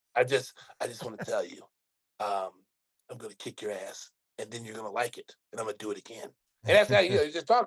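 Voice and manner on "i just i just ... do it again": put-on smooth tough-guy voice, lower and quieter. Describing how Jason Statham would threaten you: Jason Statham impression. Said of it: "He's like".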